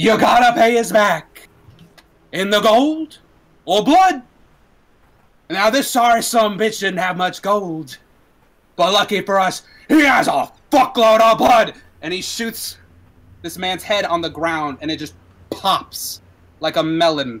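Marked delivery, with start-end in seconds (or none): 0.0-11.7 loud, far-carrying shout. Voicing a gang leader addressing the whole street: shouting out to the street. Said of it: "he's now shouting out into the, into the entire street".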